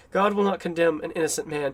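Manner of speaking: normal talking voice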